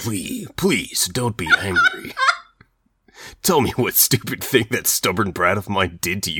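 straight, hard-switched soldier voice, swooping pitch. On a podcast doing funny voice math, delivering a character's line to Lee in Snake's voice. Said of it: "Just genuine snake voice".

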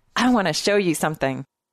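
ordinary delivery

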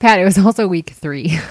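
words broken up by laughter. Correcting the other speaker's fantasy football recap, laughing while talking. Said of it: "Why are you laughing?".

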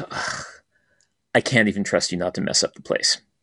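put-on gently contemptuous voice. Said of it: "this look of gentle contempt".

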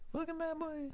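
very high, very soft, barely audible adorable little voice. Saying the catchphrase as asked, in Tama Tonga voice. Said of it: "say it like Tama".

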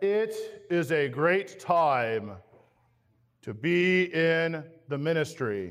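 very slow, drawn-out preacher-style pronouncement. Retelling the seminary president's opening words from the pulpit: Dale Meyer impersonation. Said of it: "That's my best Dale Meyer impersonation".

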